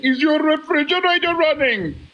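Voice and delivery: put-on Indian accent. Retelling a late-night prank caller's question, indian accent. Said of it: "in an Indian accent and said".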